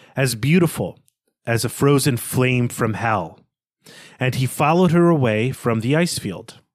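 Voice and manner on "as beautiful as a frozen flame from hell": ordinary talk, nothing marked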